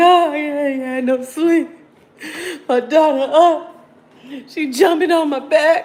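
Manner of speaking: loud, drawn-out fake tearful sobbing. A mother acts out how she'll cry to everyone tomorrow after no sleep, mock crying. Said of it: "I'm really going to be up here crying to y'all".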